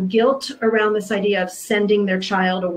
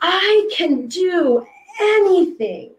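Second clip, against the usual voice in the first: mock thrilled shriek, very high; 9 semitones higher than usual. Speaker retells a girl running toward her, hands in the air: retelling a girl's joyful scream. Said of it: "screaming at the top of her lungs".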